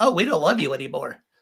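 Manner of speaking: small gnome character voice. Pitching a family story idea to the other players, in a little gnome voice. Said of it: "my Lil Guy voice that I use for all my gnomes".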